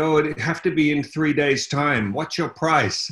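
high-pitched woman's voice. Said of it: "And she said".

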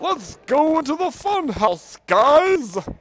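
very high-pitched, very loud vampire voice. Gamer in a horror game heads into the funhouse, calling to viewers: Count Chocula voice. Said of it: "Why did I sound like Count Chocula?".

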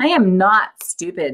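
protesting, pushing back. The woman answers the serpent, who has just called her stupid, protesting. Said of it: "she protested".

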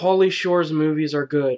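thick, obvious, dripping sarcasm. Giving an example of sarcasm: sarcastic. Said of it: "This is sarcasm".

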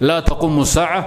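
ordinary talk, nothing marked

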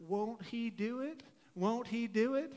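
gently spoken, soft, slow Texan drawl. Recalling a phrase Maddie repeated, the speaker quotes it in Maddie's Texan accent. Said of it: "her phrase in her Texan accent".

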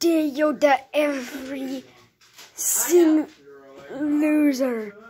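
tiny, wise alien sage creature voice. Doing a run of character impressions, the speaker moves on to a Yoda impression. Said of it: "next is Yoda".

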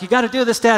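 high, urgent, hard yelling. Telling how they urged their dad to hit it overhand, retelling a yell. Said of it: "And I'm yelling at him".

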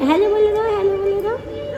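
put-on high, sing-song, coaxing baby talk.

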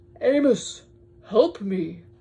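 loud, booming, big whale voice. Reading a story aloud, voicing the whale calling to the mouse: Boris the whale voice. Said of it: "It was a whale".

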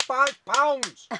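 put-on shouting. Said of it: "Stop shouting like that".

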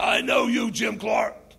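put-on man's voice, loud, slow, rough, creaky. Retelling a girl who had never spoken suddenly addressing someone, imitating a man's voice. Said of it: "in a man's voice".

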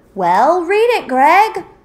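full-on, loud yelling. Searching a store for Meg after Greg finds a note by the register; yelling. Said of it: "you don't have to yell".

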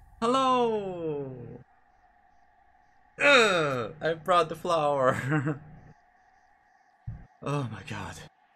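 jittery with nerves. Playing a game, bringing a character a flower: nervous, heart pounding. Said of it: "My heart is pounding so hard".

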